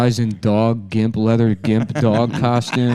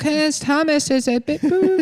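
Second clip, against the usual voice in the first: put-on baby voice, higher. Acting out a three-year-old in a car seat repeating a word: imitating a toddler. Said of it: "Her baby's like".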